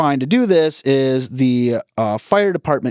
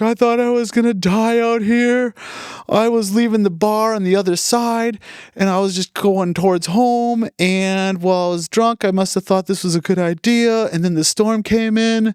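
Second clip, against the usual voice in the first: put-on high, bawling drunk man sobbing; 7 semitones higher than usual. Retelling what a crying drunk driver said after being found: imitating someone bawling. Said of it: "he's just bawling".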